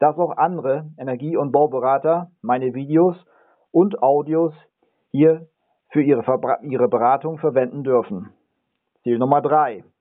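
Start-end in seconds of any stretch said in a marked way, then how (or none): 0.0-8.3 auch andere pressed with weight, emphatic stress. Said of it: "Ich betone hier ganz ausdrücklich".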